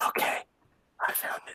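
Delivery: barely voiced, hushed whisper. Telling the other speaker the chat was found, whispering. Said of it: "Why are you whispering?".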